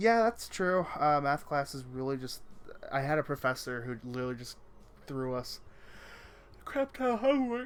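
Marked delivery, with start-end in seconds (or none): 2.9-7.7 speaking through a yawn, louder. Describing a past professor's homework load, yawning while talking. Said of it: "I'm yawning".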